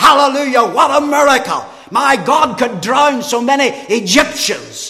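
very loud, high, swooping, excited cry. Retelling how a man in the congregation lifted his voice: retelling a loud cry. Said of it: "he lifted his voice and he cried out".

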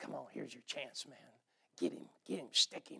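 mock, hushed, breathy whisper. Retelling how David's men urged him to attack: imitating men egging someone on. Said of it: "they instigate David".

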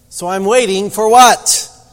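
shrill, very loud, complaining grumble. Told once again to wait, the speaker complains to god: grumbling. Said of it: "grumbled to God".

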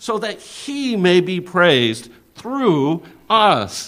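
every word leaned on, slow.

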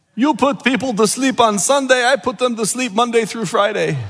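put-on horrible but earnest Egyptian accent. A pastor retelling a church member's remark to him, horrible Egyptian accent as Dr. Basali. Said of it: "horrible Egyptian accent, but I'm trying my best".

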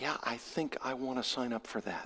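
hushed, very soft, low, very quiet tones. Asking who wants to sign up, the speaker answers in hushed tones. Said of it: "I say with hushed tones".

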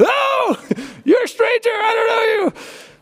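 put-on very high, startled, horrified little-boy voice. Retelling a little boy who grabbed a stranger's leg, imitating a horrified little boy. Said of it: "he's like horrified".

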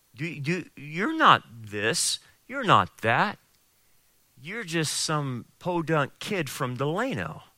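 devil-like whispering voice. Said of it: "the devil will whisper into your ear".

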